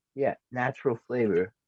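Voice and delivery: ordinary talk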